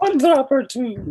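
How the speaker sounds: very high, loud, light Scottish nanny voice. In an improvised bit, speaking a little like Mrs. Doubtfire. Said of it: "It's going to be a little Scottish, a little Missus Doubtfire".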